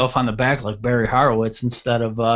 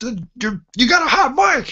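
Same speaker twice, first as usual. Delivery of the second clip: very high, rising scream; 13 semitones higher than usual. Retelling how the manager called about the hot mic: imitating the manager screaming. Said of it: "He just screamed".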